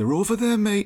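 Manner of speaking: bad put-on Geordie accent. Retelling what a Geordie man said about the toilet, in a failed Geordie accent attempt. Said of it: "I can't do the accent".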